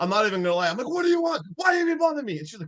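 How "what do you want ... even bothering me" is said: very high, shrill, frantic screaming outburst. Retelling screaming at his wife when she walked in during a scary scene: imitating own past screaming. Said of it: "I started screaming at her".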